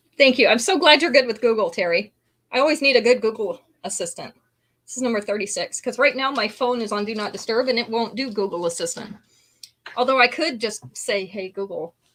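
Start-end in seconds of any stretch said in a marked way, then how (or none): 11.3-11.9 soft, quiet, hushed voice. Saying the phone assistant's wake phrase so it won't answer: saying it quietly. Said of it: "I gotta say that quietly".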